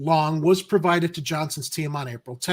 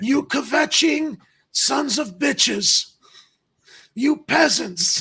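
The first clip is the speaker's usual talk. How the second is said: gravelly rasp, high, slow and dragged out; 9 semitones higher than usual. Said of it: "raspy voice impression".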